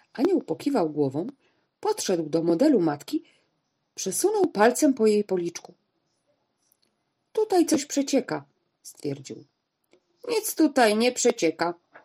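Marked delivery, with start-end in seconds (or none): 10.3-11.8 short, sharp, curt, brusque delivery. Answering an angel inspecting a model of a mother, curtly cutting him off. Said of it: "uciął krótko pan".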